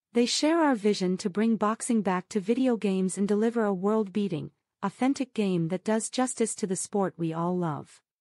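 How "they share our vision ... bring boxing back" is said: ordinary delivery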